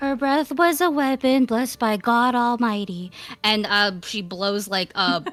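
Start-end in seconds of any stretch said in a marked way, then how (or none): 0.0-3.1 echoey speaking voice. Voicing a character in bunny form casting a spell: echoey speaking voice. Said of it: "her regular speaking voice, but kind of echoey".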